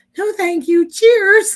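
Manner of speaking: put-on very high, loud, nice and polite Canadian accent. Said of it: "in his nice Canadian way".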